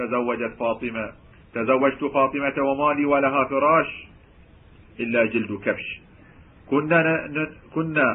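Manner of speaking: ordinary talk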